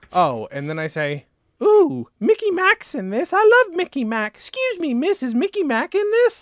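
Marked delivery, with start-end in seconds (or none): 1.6-6.4 very high-pitched, put-on British accent. Retelling own past remarks to a woman who corrected them, very high british voice. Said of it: "my voice is very high and very British".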